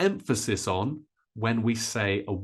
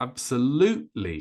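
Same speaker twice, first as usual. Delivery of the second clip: loud, high stress on lute in absolutely. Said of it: "it's number three. ... Much higher, much louder, and a little bit longer".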